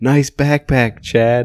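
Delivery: put-on, high yell. Retelling how you yelled out a car window at someone, retelling a yell. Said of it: "I yelled out the window".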